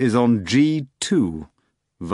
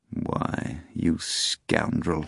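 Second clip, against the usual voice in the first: soft, thoughtful, pensive murmur, almost a whisper; 4 semitones lower, 7 dB quieter than usual. Volant looks at the board and mutters pensively. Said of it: "Volant muttered pensively".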